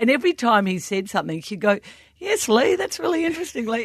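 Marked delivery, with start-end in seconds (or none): 2.2-3.6 very high, squeaky voice. Act out her replying to him every time he spoke, in a squeaky Leigh Matthews imitation. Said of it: "she would imitate Lee in the squeaky voice".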